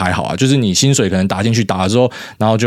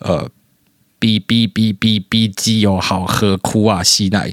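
robotic, mechanical voice. Asked to say a line in a robot voice, trying a robot voice. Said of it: "请注意用机器人的声音说".

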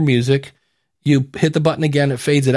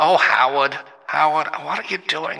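filtered telephone sound effect on the voice; 3 dB quieter than usual. Demonstrating a device's voice settings, switching to phone mode, telephone voice effect. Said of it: "now I'm on the phone".

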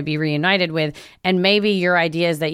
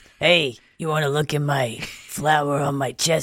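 put-on raspy, gruff clown voice. Showing what a clown voice would sound like, in a raspy clown voice. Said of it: "It's like raspy".

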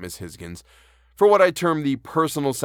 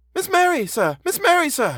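breathless, very high, frightened gasping cry; 3 dB louder than usual. The old butler rushes into the room with news, gasping. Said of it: "he gasped".

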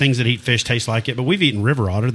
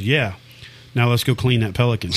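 normal talking voice

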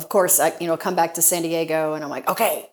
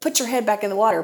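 mock, toned-down, mild yell; 4 semitones higher than usual. Telling a story, quoting a man who screamed at the speaker: imitating someone screaming. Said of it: "he starts screaming at me".

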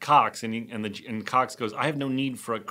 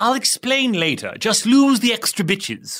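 very high, swooping British cartoon baby voice; 9 semitones higher, 7 dB louder than usual. Redoing another person's quoted line, Stewie impression. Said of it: "That's pretty good, Stewie".

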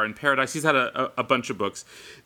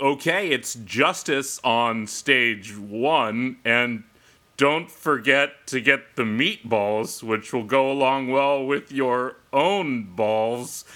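put-on club DJ announcer voice with mic-style patter. Retelling a nervous moment announcing everybody, the speaker uses the official dj voice. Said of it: "the official DJ voice".

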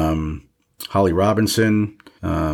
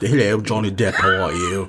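put-on British accent. Mocking how an actor talks these days: Johnny Depp's British accent. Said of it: "he talks like".

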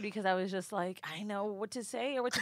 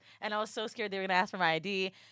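ordinary talk

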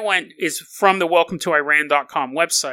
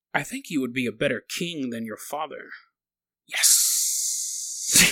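low, very soft serpent voice; 5 semitones lower, 8 dB quieter than usual. Retelling a myth, Ahriman speaks to Zahak in his serpent-like voice. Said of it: "He says in his serpent-like voice".

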